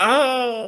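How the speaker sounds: high mock leech scream sound effect. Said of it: "and it's like".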